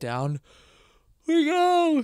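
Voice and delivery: mid-yawn speech. Speaker talks through a yawn, then apologizes for yawning again; yawning. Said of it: "Sorry for the yawning again".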